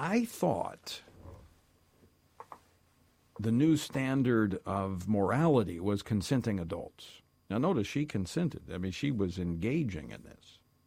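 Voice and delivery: mock-sincere, sarcastic tone. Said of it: "I'm being sarcastic here".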